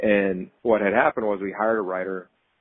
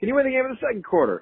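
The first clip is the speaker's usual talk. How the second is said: screaming, pitched higher. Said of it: "he would scream in the locker room".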